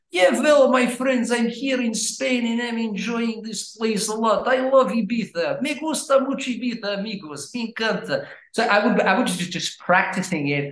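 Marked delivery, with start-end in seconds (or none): 0.1-8.2 imperfect, high-pitched fake Russian accent. Speaker shows how he talked when introduced as a Russian guy: put-on Russian accent. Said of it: "introduce you as being a Russian guy".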